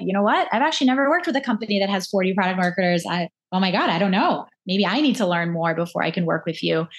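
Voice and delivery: plain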